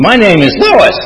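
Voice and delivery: high, loud, piercing screeching voice.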